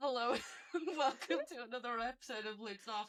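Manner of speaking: giggling.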